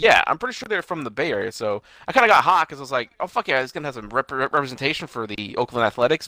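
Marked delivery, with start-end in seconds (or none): none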